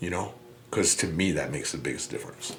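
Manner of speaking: soft, choked-up voice thick with emotion. Explaining why getting help makes the biggest difference, choked up. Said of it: "I got a little choked up too".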